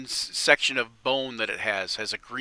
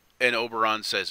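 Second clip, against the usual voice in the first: ordinary talk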